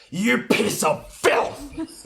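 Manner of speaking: very high, very loud, slow, drawn-out furious shout. Voicing a character charging an enemy with an axe: shouting in anger. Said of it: "I'm shouting at her".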